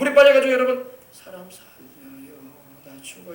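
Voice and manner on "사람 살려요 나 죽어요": soft, slow, put-on whisper. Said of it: "이러시는 사람 있습니까?".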